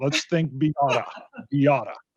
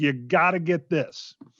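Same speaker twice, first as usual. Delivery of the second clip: put-on, forceful, pushy, emphatic American insistence. Retelling what a husband told his wife, imitating emphatic insistence. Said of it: "Using the emphatic".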